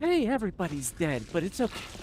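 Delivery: sarcastic, bright, swooping, fake excited cheer. Speaker demonstrates reading somber letters with excitement, mock-excited cheerful reading. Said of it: "You're reading out of excitement? ... I'll sound really excited about it".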